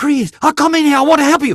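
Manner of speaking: put-on English spoken with a Chinese accent. Showing how the client wanted the line read: Chinglish-accented voice. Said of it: "it's Chinglish".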